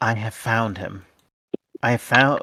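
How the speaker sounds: discreet, secretive, confiding delivery. Leaning forward after checking no servers approach, the character speaks in a quiet voice. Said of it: "leans forward and in a quiet voice says".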